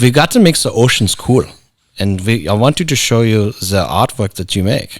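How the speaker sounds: put-on thick German accent. Speaker retells what a caller told him, in a thick German accent. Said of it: "He's a very thick uh, German accent".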